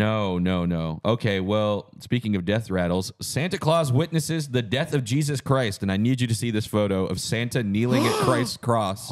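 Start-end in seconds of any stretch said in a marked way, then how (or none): none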